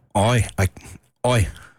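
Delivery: low, fake British accent. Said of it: "Can you do a British accent?".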